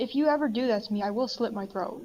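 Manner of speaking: very matter-of-fact, flat, factual delivery. Telling the others in character not to leave them behind: said very matter-of-factly. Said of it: "I'm just saying this very matter-of-factly".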